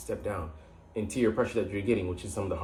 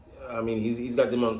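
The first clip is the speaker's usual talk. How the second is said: normal talking voice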